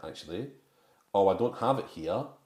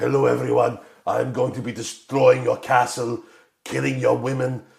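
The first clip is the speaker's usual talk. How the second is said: very loud, booming put-on German accent; 4 semitones higher, 9 dB louder than usual. Describing what you'd expect from a man with that voice, in a German accent.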